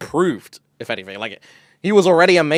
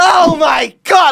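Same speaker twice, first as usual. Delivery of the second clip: loud, high, carried-away, noisy outburst; 8 dB louder than usual. Recounting a loud man at IKEA, the speaker imitates him: imitating a loud guy. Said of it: "Like he was actually like that".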